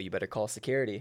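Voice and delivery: mock whisper, low and soft. Retelling a whisper into someone's ear from behind: imitating own whisper. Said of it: "I whisper in his ear".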